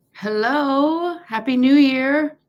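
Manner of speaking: high, excited, very drawn-out holler. Greeting viewers as they join a livestream: excited shouting. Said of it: "I don't know why I'm shouting".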